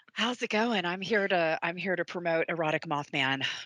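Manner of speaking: sultry-sounding voice. Greeting the others and joking about promoting the book: sultry voice. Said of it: "With that sultry voice".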